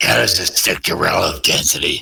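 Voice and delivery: low, mocking put-on voice impression. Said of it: "I think it was just Batman impression".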